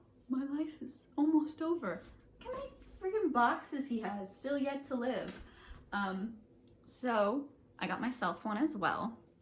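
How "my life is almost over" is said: sorrowful, glum, sad, pitched-up lament. Retelling a friend's reaction to a birthday gift: imitating Marco sounding sad. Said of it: "he got real sad, real fast".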